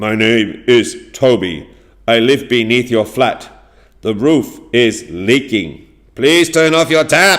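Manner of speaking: loud, very angry voice. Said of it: "he's very angry".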